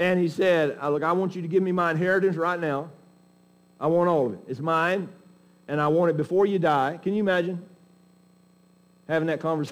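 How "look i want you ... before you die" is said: cross-grained, irritated, impatient, demanding tone. Retelling the prodigal demanding his inheritance from his father: imitating an irritated son. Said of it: "He was irritated".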